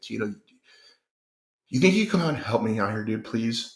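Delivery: pressing, urgent tone. Retelling a friend's call for help after a hurricane: imitating an urgent plea. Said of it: "I could hear the urgency in his voice".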